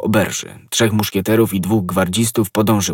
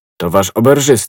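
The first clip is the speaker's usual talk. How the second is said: usual speaking voice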